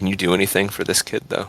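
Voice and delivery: put-on very quiet whisper. Kneeling by a wounded child, whispering to Duncan in character: whispering really quiet in character. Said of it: "I'm just whispering to you, Duncan, like, really quiet".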